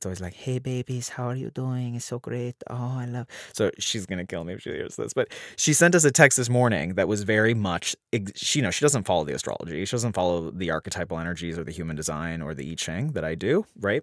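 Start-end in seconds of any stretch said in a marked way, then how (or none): 0.3-3.3 put-on chatty Catalan Spanish accent on English. Reading out a mother's text message: imitating her mother's Catalan Spanish accent. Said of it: "it's in her accent".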